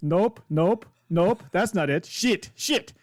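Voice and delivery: terrible, unconvincing put-on Italian accent. Chopper sifts through stuff looking for a tracking device; terrible Italian accent. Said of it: "in a really terrible Italian accent".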